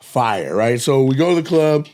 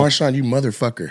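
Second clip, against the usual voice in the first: ordinary delivery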